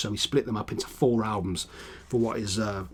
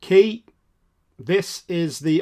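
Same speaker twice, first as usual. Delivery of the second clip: full-on loud, high, drawn-out shout; 8 semitones higher, 8 dB louder than usual. Introducing the next album in a review, the host is shouting. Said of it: "I don't know why I'm shouting".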